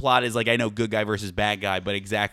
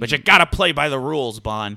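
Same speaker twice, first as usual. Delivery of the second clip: loud, stern, barking voice of authority; 3 semitones higher, 5 dB louder than usual. Voicing a boss scolding Bond about rules: Harrison Ford voice. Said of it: "you just turned into Harrison Ford".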